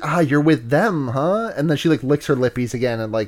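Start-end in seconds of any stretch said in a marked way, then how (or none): 0.0-1.5 put-on sensual threatening voice, lower pitch. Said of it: "sensual, like, "I'm gonna kill you" type voice".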